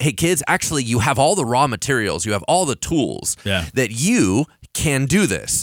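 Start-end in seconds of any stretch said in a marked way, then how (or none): none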